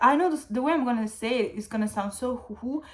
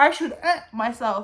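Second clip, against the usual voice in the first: ordinary talk, nothing marked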